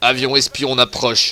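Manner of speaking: big, deep announcer voice. Show how the guy in a game announces enemy aircraft, in the Secret Story guy's big voice. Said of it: "avec sa grosse voix de, du mec de Secret Story".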